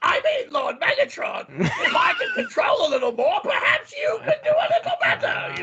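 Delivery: very high, slow, drawn-out, swooping sing-song yell. Describing a cartoon scene, the speaker acts out Starscream answering his leader, Starscream impression. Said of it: "that's a terrible impression".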